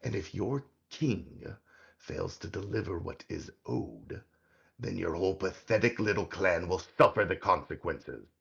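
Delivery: hard, commanding, demanding voice. Voicing a hidden speaker who scolds a goblin: demanding voice of the hidden speaker. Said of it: "And you hear the voice say".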